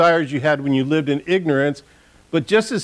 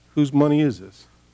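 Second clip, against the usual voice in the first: calm, even tone. Recalling a voice heard while praying, retelling a calm question. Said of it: "God's voice just calmly said to me".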